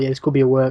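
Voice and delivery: ordinary talk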